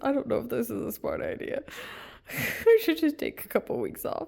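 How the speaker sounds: speaking through laughter. Joking about needing time off after a mix-up: laughing while talking. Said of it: "I'm laughing at myself".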